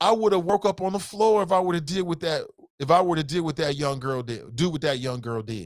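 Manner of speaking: normal talking voice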